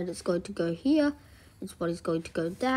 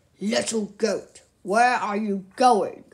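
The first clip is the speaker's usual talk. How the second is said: loud, cross, angry storybook wolf voice; 5 dB louder than usual. Reading a story aloud, the narrator voices the wolf questioning the goat: mad wolf voice.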